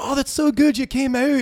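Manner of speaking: high, loud Scottish brogue.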